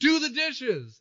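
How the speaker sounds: high, loud, slow bossy yell. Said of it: "his sister's like".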